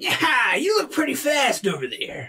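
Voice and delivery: high, swooping adult gnoll creature voice. Narrating a gnoll that walks up and challenges you: high-pitched gnoll voice. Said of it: "Is that just like the high pitched gnoll voice".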